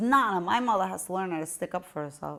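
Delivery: normal talking voice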